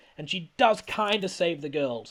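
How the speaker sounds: usual speaking voice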